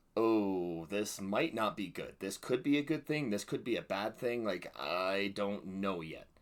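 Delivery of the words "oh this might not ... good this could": plain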